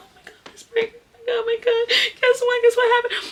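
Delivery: mock tearful, very high-pitched, loud crying. Retelling a phone call to the principal, acting out their past self crying. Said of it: "I called my principal crying".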